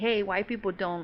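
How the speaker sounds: ordinary delivery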